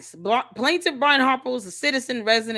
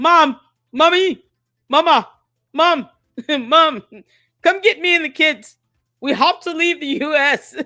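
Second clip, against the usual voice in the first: loud shout in a grown man's voice; 3 semitones higher, 5 dB louder than usual. Imitating someone phoning his mom to come get him. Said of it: "he's probably calling his mom like".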